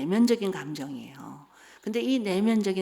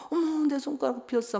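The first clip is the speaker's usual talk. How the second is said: mock, exaggerated, high, whiny fussing; 7 semitones higher than usual. Retelling cutting a finger while cooking and fussing to the husband: imitating own whiny fuss. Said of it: "막 이러면서 엄살을 부리면".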